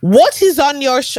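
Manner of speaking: very high, bad, horrible fake Brazilian accent. Retelling what a girl from Brazil asked her, horrible Brazilian accent. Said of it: "That's a horrible accent".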